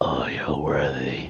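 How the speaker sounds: deep, rough, gravelly voice. A storyteller voices an unrecognized speaker answering the player: gravelly unfamiliar voice. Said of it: "this gravelly voice that you don't recognize goes".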